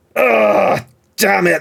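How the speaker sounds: huffy strop. Voicing a barbarian stopped mid-punch by a friend's voice: sulking in a strop. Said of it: "sit down in a strop".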